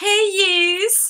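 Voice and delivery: put-on high Liverpool Scouse accent, yous drawn out. Explaining Liverpool slang, speaker quotes how Scousers talk in a Liverpool Scouse accent. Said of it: "I'm going to get embarrassed doing the accent".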